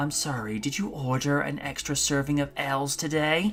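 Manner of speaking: put-on creepy menacing voice. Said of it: "Raiden just very creepily just starts rising".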